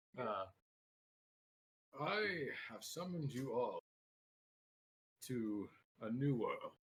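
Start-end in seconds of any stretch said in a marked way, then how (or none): 2.0-6.7 put-on elderly man character voice. Telling a story as an old man, put-on old man voice. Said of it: "As my old man voice".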